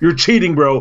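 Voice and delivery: put-on yelling. Retelling accusing a player of cheating at a board game: retelling yelling at a player. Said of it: "yelling at him".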